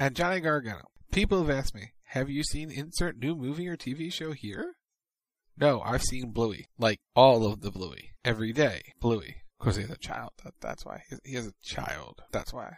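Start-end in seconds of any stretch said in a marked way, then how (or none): none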